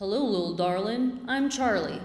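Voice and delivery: put-on Southern American accent. Retelling what a person said on coming back in: imitating a Southern accent. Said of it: "That was my best Southern accent".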